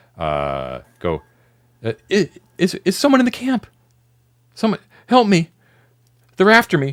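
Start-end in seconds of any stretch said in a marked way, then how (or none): 1.8-6.9 put-on very high, very loud young woman's voice. Voicing a stranger who calls into the camp for help: younger female voice. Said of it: "it sounds much, uh, younger than Helen".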